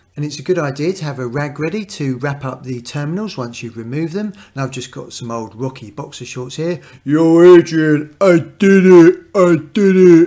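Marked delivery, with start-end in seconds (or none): 7.1-10.3 booming, drawn-out holler, slow and huge. Mid car-battery how-to, the presenter holds up old boxer shorts; Rocky impression.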